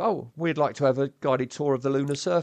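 usual speaking voice

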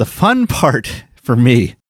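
giggly, sing-song talking through a giggle. Calling a task the fun part, sarcastically: giggling while talking. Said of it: "I'm giggling 'cause it's".

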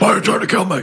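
put-on gravelly superhero voice. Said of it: "his voice was just too gravelly".

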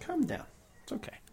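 soft, high, soothing hush.

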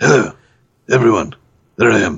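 put-on British film star leading-man voice. Doing an impression of a British actor, Luke Evans impression. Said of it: "this is my impression of Luke Evans".

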